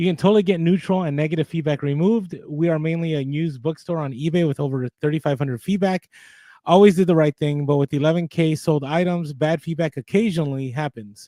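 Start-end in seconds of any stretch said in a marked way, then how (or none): none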